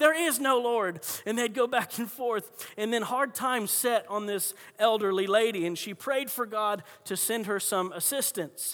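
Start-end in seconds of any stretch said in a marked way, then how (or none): 0.0-1.0 heated, angry yelled shout. Telling a story, the atheist neighbor shouting back at the lady: shouting back. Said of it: "he'd shout back".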